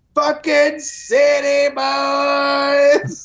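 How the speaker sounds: high, slow, drawn-out mocking yell.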